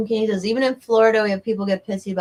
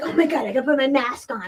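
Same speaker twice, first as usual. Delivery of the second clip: put-on frantic, panicked voice, higher pitch; 5 semitones higher than usual. Retelling an older woman's reaction about masks: imitating frantic panic.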